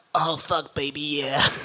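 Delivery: sudden put-on American accent. Retelling what someone overheard him saying, the speaker uses an American accent. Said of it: "Mark heard me in an American accent going".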